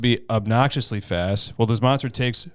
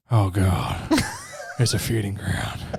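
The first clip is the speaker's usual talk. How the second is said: very slow, drawn-out delivery with swooping pitch; 3 semitones lower than usual. Chatting with co-hosts, one redoes a line in Nick Cage voice. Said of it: "I'm going to do that in my Nick Cage voice".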